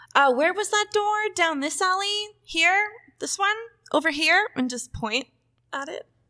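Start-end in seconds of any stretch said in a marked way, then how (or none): 0.2-4.5 very high, very loud shouted yell. Acting out a scene, calling to Tom a few feet ahead: speaking very loudly. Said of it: "speaking very loudly, like I'm trying to yell".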